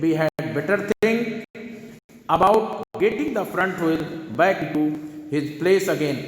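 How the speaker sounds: ordinary delivery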